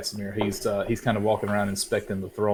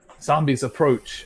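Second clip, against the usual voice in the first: raised, pitched-up yell calling out; 5 semitones higher, 4 dB louder than usual. A narrator voices a character alerting people who haven't heard, yelling a warning. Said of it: "he yells out for the people".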